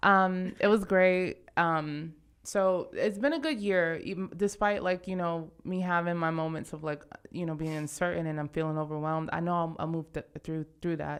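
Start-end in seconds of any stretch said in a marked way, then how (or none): 9.3-11.2 stuttering, stammering, quieter, lower and faster. Looking back on a year of feeling uncertain and overwhelmed, stuttering. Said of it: "I'm stuttering".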